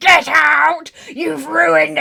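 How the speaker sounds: mock drawn-out rasping yell. Retelling turning around to her when she came into the room, mock-angry yell. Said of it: "turn around to her and be like".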